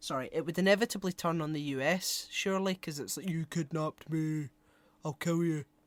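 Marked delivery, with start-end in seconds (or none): 3.3-5.6 put-on comic-book creature monster voice. Doing what he calls a flawless impression, in Starro the Conqueror voice. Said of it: "that's a it's a flawless impression of Starro the Conqueror".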